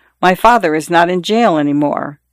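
ordinary delivery, nothing marked

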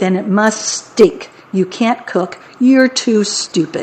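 ordinary talk

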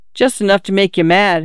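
ordinary delivery

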